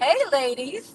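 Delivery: pleasant, really nice, friendly nice-guy tone. Retelling one of two disembodied voices you heard, retelling a real nice greeting. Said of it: "real nice".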